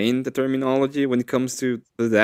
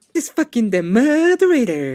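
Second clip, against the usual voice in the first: mimicked woman's voice, higher; 9 semitones higher than usual. Retelling a funny line that a woman said on stream: imitating her saying it. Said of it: "I find it so funny when she said it".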